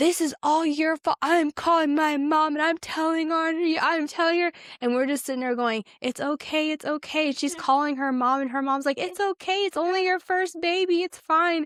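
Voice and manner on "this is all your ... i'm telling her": crying, blaming, tearful yelling outburst. Retelling a woman yelling at her husband, imitating a woman crying and yelling. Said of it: "cried and was yelling at her husband".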